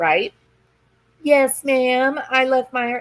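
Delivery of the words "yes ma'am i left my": mock meek, childlike little-girl voice. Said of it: "She's being very meek".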